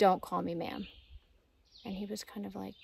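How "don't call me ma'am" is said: play-acted very stern, severe, unbending tone. Retelling what a driver told a polite hiker: imitating a stern remark. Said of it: "she says very sternly".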